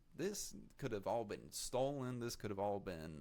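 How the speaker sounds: ordinary talk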